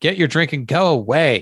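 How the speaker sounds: mild, contained yell. Reading out a clip where Walker shouts at a driver: imitating Walker shouting. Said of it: "Sounds just like him".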